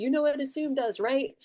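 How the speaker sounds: mock yell, high-pitched and pointed. Recalling what a man would yell whenever they rushed and missed a layup, retelling a yell. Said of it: "he would yell".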